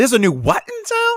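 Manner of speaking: very high, squeaky voice. Reading a scene aloud, voicing Bloodsworth's line as a squeak. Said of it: "He squeaked".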